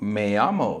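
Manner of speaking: swaggering Miami manner. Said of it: "say it with some Miami swag".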